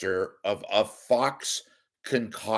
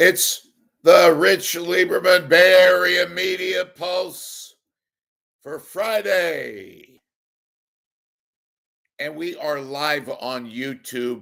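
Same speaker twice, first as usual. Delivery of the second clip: loud, high-pitched yelling and screaming, "Friday" stretched long; 7 semitones higher, 7 dB louder than usual. Opening a live broadcast on YouTube: yelling and screaming. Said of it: "I'm yelling and screaming".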